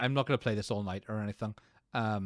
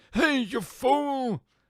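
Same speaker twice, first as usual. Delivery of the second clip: put-on very high, loud old man yell, "fool" stretched; 13 semitones higher, 5 dB louder than usual. Praising a voice that keeps coming up, repeating its line in the old man voice. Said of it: "the old man voice".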